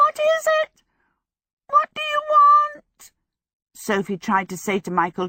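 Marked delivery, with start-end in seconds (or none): 0.0-3.1 very high, shrill, crackly, alarmed and frightened cry. Narrator reading a frightened creature crying out at Sophie's arrival, shrill, crackling voice. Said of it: "cried out in a shrill, crackling voice".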